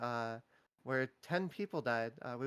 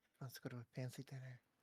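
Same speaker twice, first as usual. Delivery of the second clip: secretive half-whisper, very quiet, barely audible; 12 dB quieter than usual. During a game session with others, half-whispering. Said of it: "Why are you whispering?".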